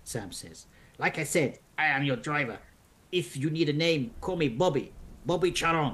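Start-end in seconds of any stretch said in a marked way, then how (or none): 1.0-5.9 put-on cab driver voice and accent. A narrator voices a cabbie answering a passenger's question: cabbie accent. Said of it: "I think I've misplaced this accent".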